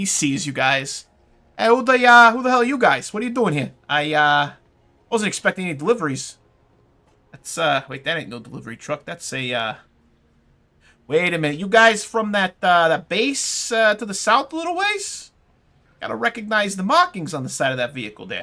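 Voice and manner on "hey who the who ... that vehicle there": loud New Jersey construction-worker voice. Voicing a man questioning strangers who arrive in a vehicle, in a New Jersey accent. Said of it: "he's fucking from Jersey".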